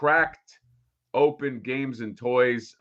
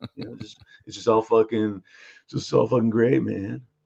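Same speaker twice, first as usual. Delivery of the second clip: put-on dismissive voice. Redoing the impression of Peter from Mondo as too busy: Peter from Mondo impression, too busy. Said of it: "you sound like you are too nice".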